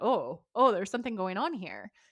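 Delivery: ordinary talk, nothing marked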